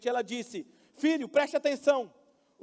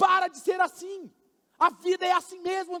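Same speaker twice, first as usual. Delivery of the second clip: mock scolding, voice raised in anger; 7 semitones higher, 3 dB louder than usual. Father retelling scolding his crying daughter; retelling raising voice angrily. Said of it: "E eu alterei a voz com ela".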